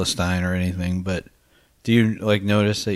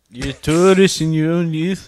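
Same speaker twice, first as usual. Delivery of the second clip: put-on Scottish accent, raised and high-pitched; 8 semitones higher, 6 dB louder than usual. Repeating his own remark to the group in an accent: Scottish accent. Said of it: "That's a great accent".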